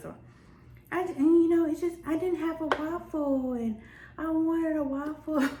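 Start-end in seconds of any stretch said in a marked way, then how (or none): 2.1-5.5 put-on slow, whiny, childish little-girl voice. Retelling a dream about a little girl and her mom, imitating a little girl whining. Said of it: "she was just kind of like whiny voice".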